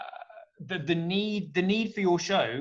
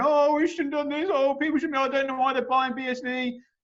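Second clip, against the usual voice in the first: play-acted sobbing, whimpering, high and whiny; 9 semitones higher, 3 dB louder than usual. Imitating people who hold the other coins: mock crying. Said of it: "They're all gonna be crying, going".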